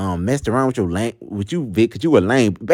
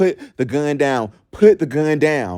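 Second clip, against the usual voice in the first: acted, drawn-out, mild half-shout, said repeatedly; 3 semitones higher than usual. Retelling a tense standoff with a gun, retelling a yell. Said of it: "I'm yelling, yelling, yelling".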